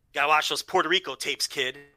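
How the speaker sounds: usual speaking voice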